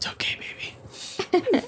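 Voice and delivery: very quiet, breathy, barely audible whisper. Player character comforting a crying companion, whispering. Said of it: "I whisper".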